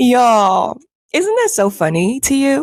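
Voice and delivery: talking through bursts of laughter, swooping, drawn-out "y'all". Addressing the audience about a trend nobody predicted, laughing while talking. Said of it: "I'm laughing because the internal joy".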